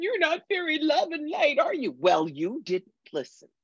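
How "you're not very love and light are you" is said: very high, offended, upset voice. Retelling a woman's reaction after the speaker turned down her help, imitating someone upset. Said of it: "she gets real upset and goes".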